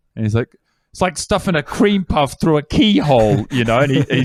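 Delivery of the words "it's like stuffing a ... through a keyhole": exasperated, high-pitched, flung-out flourish. Retelling a flamboyant character's line, delivered with a real flourish: imitating Anthony, exasperated with flourish. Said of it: "he's quite exacerbated and his eyebrows are really high".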